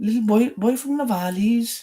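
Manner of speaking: put-on Welsh accent with a Welsh valleys lilt. Trying out accents, showing the only Welsh line known: Welsh accent.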